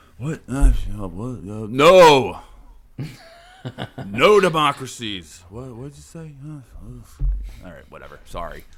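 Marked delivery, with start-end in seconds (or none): 0.2-6.3 loud, raised, put-on elderly statesman president voice. Showing the other speaker an improving Biden impression. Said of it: "My Biden impression is just like".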